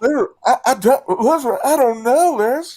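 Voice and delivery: muffled, shrill, very high and very loud. Performing a line heard from inside her apartment, in a muffled voice. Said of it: "gotta do the muffled sound".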